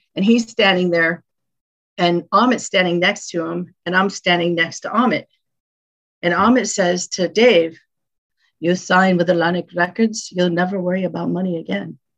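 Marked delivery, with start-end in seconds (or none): 8.6-11.9 put-on male Turkish accent. Speaker retells a man pitching Atlantic Records to a guitarist: imitating Amit's Turkish accent. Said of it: "Just in this Turkish accent".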